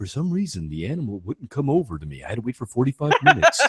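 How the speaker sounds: low, soft, muffled mumble. Mocking how a reviewer talks in his reviews: muffled Marty Sleva impression. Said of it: "why are you muffled".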